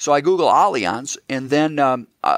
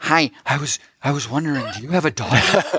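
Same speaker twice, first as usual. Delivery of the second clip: put-on creepy voice, slower. Imagining his first meeting with a man, the speaker uses a mock-creepy voice. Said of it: "Excellent creepy voice".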